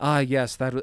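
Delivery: mock emotionally distant, cold, clinical, analytical delivery. Imitating a movie kid reacting to a cancer diagnosis: imitating an emotionally distant, cold, analytical kid. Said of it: "in such an emotionally distant, cold, analytical way".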